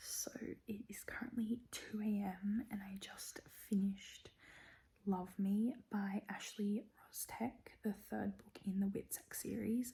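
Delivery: hushed, quiet whisper, kept down. Speaker gives a reading update at two a.m. while partner sleeps, whispering. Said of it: "I'm whispering because it's two A M".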